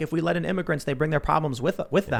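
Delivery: ordinary delivery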